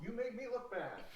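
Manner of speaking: grumpy, high-pitched, quiet cartoon character grumble.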